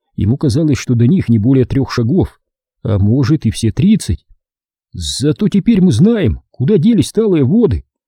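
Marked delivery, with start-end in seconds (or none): 4.9-7.8 strained forced calm, pitched up. A boy who has fallen into a hole speaks to a girl, forcing himself to sound calm. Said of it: "изо всех сил стараясь держаться мужественно и спокойно".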